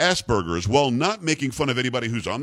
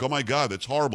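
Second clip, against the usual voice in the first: normal talking voice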